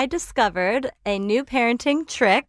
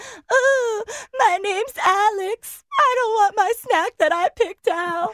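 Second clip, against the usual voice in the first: sulky, whiny mocking little-child voice, pitched way up; 12 semitones higher than usual. Speaker mocks a child's snack meltdown to his face, mimicking Alex. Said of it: "I literally mimicked him".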